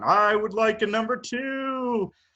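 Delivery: very high, very slow, drawn-out "two". Retelling ordering food in an impression of a guest: John Orlando impression. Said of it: "I tried to order Wendy's as John".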